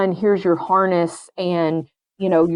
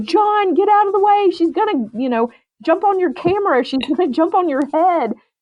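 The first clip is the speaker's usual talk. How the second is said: mock high-pitched screamed yell; 11 semitones higher than usual. Retelling warning the photographer as the dog swims at him: imitating screaming a warning. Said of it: "so I'm screaming".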